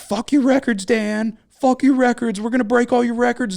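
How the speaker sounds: very high, wild, shrill, loud screaming rant. Recall a video of a man screaming at Dan Marino while Marino is being honored, imitating someone screaming. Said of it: "he's screaming at him".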